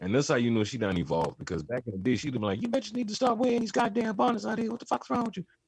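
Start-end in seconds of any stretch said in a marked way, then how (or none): 2.6-5.4 very high, angry tirade, going off in a rant. Speaker acts out how Mo'Nique used to react back in the day, Mo'Nique going off, mock-angry. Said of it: "She'd have done gone off".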